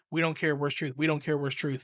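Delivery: ordinary talk, nothing marked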